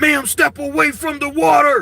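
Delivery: very loud, shrill, high-pitched commanding yell. Describing police confronting a woman at a stove: police officer voice. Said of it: "that police voice".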